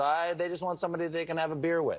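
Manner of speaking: ordinary talk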